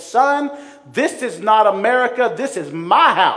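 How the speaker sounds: mean, loud voice. Retell what you said to your son, imitating your mean, loud voice. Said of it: "with a mean voice and a loud voice".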